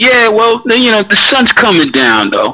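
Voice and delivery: polished, offhand casual voice. Retelling own past words to a listener, imitating own casual nonchalant voice. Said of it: "it was a casual voice, like".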